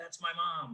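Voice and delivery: soft, hushed stage whisper. Retelling the stranger's half-whispered reply in the line: imitating someone half-whispering. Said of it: "he whispered back".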